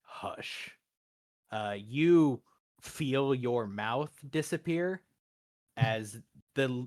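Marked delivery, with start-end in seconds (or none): 0.1-0.7 deeper, hushed whispering voice. Voicing a figure who silences the player in a deeper voice. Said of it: "and in a deeper voice, uh, your brother says".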